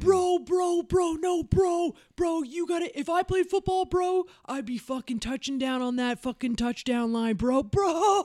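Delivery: shrill, shouty, very high yell-talking. Retelling guys yell-talking about football behind them: imitating guys yell-talking. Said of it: "just fucking yell talking behind my head".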